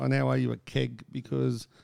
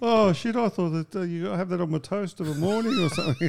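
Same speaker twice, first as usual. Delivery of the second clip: animated, high, swooping sing-song voice; 5 semitones higher than usual. Retelling what a friend said on meeting someone: impersonating Greeny. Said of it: "Is that your Greeny impersonation?".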